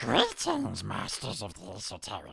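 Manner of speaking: rough, creaky creature voice, swooping up and down. Reading a listener's letter aloud as asked: Gollum voice. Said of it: "he wants you to do it like Gollum".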